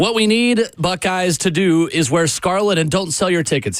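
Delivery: ordinary talk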